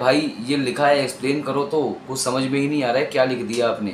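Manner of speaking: ordinary talk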